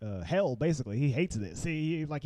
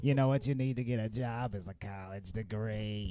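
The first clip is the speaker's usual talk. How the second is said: put-on lady voice, lower pitch; 5 semitones lower than usual. Retelling what the unemployment lady tells Goofy: Roz voice. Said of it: "She sounded like Roz from Monsters".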